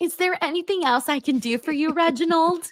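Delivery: polite, sweet front-desk voice. Role-playing a receptionist speaking to Reginald, in a receptionist voice. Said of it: "You got the voice".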